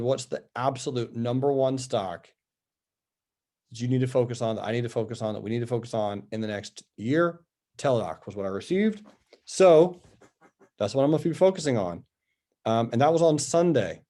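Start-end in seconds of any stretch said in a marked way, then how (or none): none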